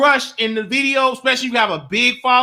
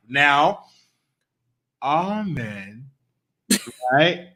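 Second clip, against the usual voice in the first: very slow, low, soft, drawn-out word-by-word drawl; 10 semitones lower, 5 dB quieter than usual. Introducing today's subject to the other speaker, saying it very slowly. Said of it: "Why you got to say it so slow?".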